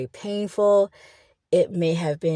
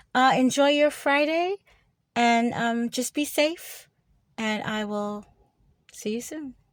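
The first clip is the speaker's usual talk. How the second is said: casual, easy tone with raised pitch; 5 semitones higher than usual. Speaking outside, signing off to "you guys" for Friday: a little loud. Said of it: "I'm sorry if I'm a little loud".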